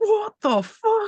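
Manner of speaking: put-on very high-pitched exclamation in a thick Irish accent. Retelling a passing motorcyclist's reaction: imitating a thick Irish accent. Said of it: "this thick Irish accent".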